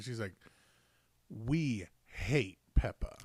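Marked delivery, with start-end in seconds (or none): 1.3-3.2 mock deadpan, very low, dead serious delivery. Retelling what a child said to the adults: imitating Sophia dead serious. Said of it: "as serious as could be".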